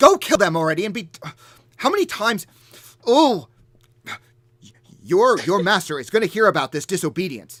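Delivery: very loud, high, angry teacher scolding. Voicing a tantrum-throwing giant ordering her giants to attack: scolding like a teacher. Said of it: "pointing at you like a, like a teacher".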